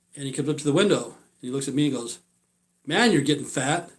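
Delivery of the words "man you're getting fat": ordinary talk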